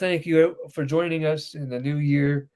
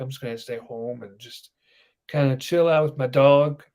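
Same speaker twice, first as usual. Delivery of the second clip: plain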